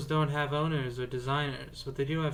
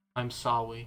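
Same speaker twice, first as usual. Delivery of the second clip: put-on, earnest, utmost sincere tone; 4 semitones lower than usual. Apologizing to the others for narrating over them: mock sincere apology. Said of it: "in the most sincere way I can muster".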